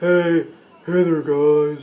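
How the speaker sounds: dopey, dim-witted, dumb-sounding voice. Showing that dumb has a sound to it, in a dumb-sounding voice. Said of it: "dumb has a sound to it".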